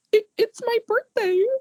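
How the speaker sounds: put-on tearful young girl. Describing a gun trick gone wrong, voicing the young girl, imitating a tearful child. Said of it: "starting to tear up".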